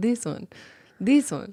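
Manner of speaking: put-on cat-person creature character voice. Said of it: "They talk like".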